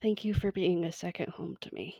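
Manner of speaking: soft hushed whisper close to the ear. Playing a character hugging Comet and thanking her: whispering. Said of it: "just kind of whispering into Comet's ear".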